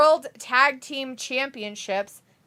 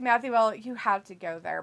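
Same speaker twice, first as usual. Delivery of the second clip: plain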